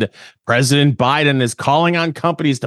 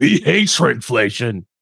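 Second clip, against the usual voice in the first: gruff, put-on monster voice. Switching from Elmo to Cookie Monster about shrinkflation: Cookie Monster voice. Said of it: "It's really hard to transition from Elmo to Cookie Monster".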